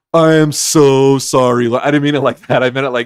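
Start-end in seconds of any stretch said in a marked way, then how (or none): 0.2-1.7 mock, very slow, loud, snide, sarcastic, drawn-out delivery. Repeating own earlier apology, repeating own sarcastic apology. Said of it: "it came out really sarcastic".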